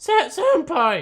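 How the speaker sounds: cracking put-on voice. Reading a character's line aloud in a put-on voice: cracked character voice. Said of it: "that just sounds like a cracked voice".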